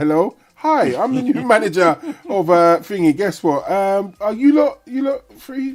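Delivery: high-pitched, showy, put-on boss voice. Imitating a new manager introducing themselves to the staff, high put-on voice. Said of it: "all in the high voice".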